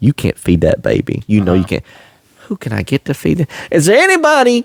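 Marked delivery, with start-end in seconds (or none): 0.0-1.8 put-on whisper sounding like it comes from heaven. Telling a comic story, the speaker voices God whispering from heaven. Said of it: "God's like whispering from heaven".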